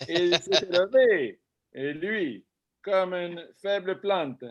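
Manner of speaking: overdone fake Italian accent on French speech. Reading a passage aloud while being coached on accent, in an overly Italian accent. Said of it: "c'est trop italien".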